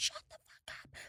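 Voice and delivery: very soft, hushed whispered swearing snap.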